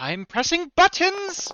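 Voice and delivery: very high-pitched, loud yelling. Yelling in character while doing a hacking roll: yelling. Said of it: "I'm just yelling out as I'm doing this".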